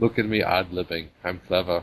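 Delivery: low-key, boring put-on voice. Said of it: "you have to do him, like, really low-key and boring".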